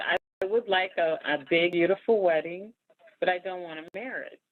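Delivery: ordinary delivery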